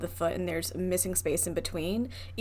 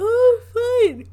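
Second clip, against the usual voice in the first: very high, very loud words said mid-yawn; 11 dB louder than usual. Listening to a co-host's story and reacting: yawning while speaking. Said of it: "she says while yawning".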